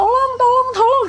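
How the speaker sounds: frantic, loud, high-pitched cries.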